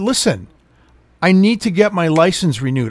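ordinary talk, nothing marked

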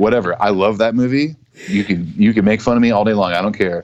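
ordinary delivery

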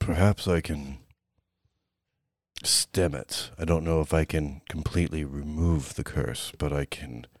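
very deep, low character voice. In a role-play game, a character answers a question about curses, very deep voice. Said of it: "You can hear his voice. It's so deep that it does muffle through all the blood that is dripping out of the side of your head. ... It's so deep that it does muffle through all the blood that is dripping out of the side of your head".

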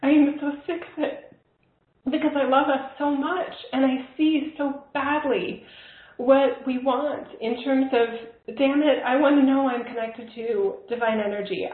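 speaking tearfully, crying through the words. A speaker voicing frustration with spiritual teachers talks while in tears. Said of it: "I'm literally in tears right now".

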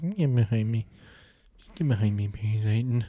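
quiet, soft-spoken, gentle, unassertive tone. Imagining Jesus said it the other speaker's way: imitating a quiet Jesus. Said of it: "Maybe Jesus was quiet".

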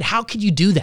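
ordinary talk

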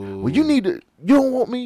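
pushy, forceful delivery. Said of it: "he was all in her face".

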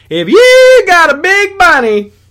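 terrible shrill voice, belted high, loud and slow. Joking about a photo of a giant bunny: terrible Jeff Foxworthy impression. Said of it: "That was a terrible Jeff Foxworthy".

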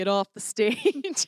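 slow, godlike voice from heaven. Joking about being told off while on the church stage: voice from heaven. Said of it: "A voice comes down from heaven".

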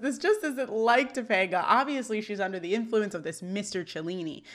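usual speaking voice

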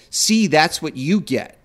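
ordinary talk, nothing marked

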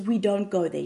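ordinary talk

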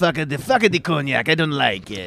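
put-on French accent. Joking about whiskey makers, the speaker quotes them in a french accent. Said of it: "That's my French accent".

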